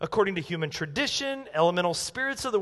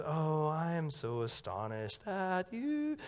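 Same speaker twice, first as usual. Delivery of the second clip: very hushed, drawn-out, slow, somber, pious holy-man voice; 3 semitones lower, 9 dB quieter than usual. Speaker on Galatians acts out the classic holy-man version of Paul, mock somber holy-man tone. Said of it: "think spiritual, somber, holy man".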